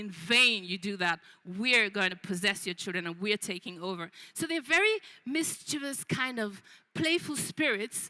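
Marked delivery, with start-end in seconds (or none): 0.0-4.1 low, mocking ghostly voice. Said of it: "the Abiku are kind of laughing at people and say".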